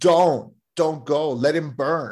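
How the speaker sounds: acted-out horrified yell. Retell what a movie character yells to the fireman, imitating a horrified, pained yell. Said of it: "the horror and pain in Laurie Strode's voice when she's yelling".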